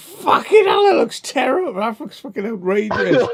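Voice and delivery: play-acted horrified, appalled outburst, high-pitched. Recalling watching himself make faces, acting out his own horrified reaction. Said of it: "like horrified by myself".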